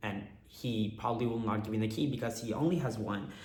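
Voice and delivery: ordinary talk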